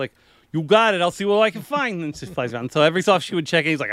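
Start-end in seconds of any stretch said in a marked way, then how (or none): 0.5-2.0 put-on pitched-up New York accent. Voicing the flying character answering her request, in a New York accent. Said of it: "it was like a New York kind of thing".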